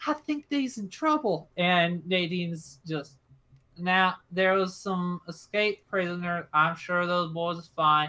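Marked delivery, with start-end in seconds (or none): 0.1-1.5 put-on whisper, much higher pitch. Retelling what a woman told Nadine about the police: imitating a woman whispering. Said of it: "And she like whispers".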